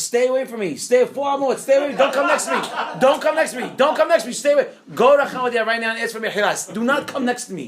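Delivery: acted, high-pitched screaming, over and over. Retelling how the rabbi screamed at the man to stay away: retelling a scream. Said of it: "He starts screaming at him".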